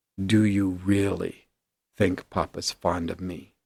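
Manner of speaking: hushed whisper. Retelling what she whispered after regaining composure, whispering. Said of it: "she just whispers".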